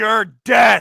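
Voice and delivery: full-blast, very loud yelled shout. A player answers an enemy's taunt in character, yelling back. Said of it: "I'm just gonna yell back".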